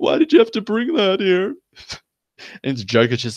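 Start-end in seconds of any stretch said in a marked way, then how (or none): 0.0-1.5 very high, fake sobbing cry. Retelling a parody where the Joker aims a gun at Batman, mock sobbing as Batman. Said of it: "Batman just like starts sobbing".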